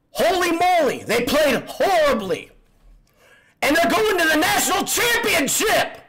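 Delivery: very high, ear-splitting, thrilled excited shout. Reacting to the team reaching the national championship: excited yelling. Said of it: "I'm blowing eardrums".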